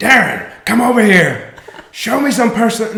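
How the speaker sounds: high-pitched calling out. Asked for an impersonation, quoting what Vince McMahon used to say: Vince McMahon impression. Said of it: "can you do a Vince McMahon impersonation?".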